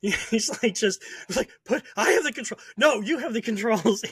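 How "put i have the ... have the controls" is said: frantic, panicked delivery, words tumbling out. Retelling a flight lesson when the instructor freaked out, imitating a panicked instructor. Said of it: "He lost it".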